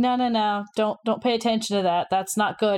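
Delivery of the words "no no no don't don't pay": usual speaking voice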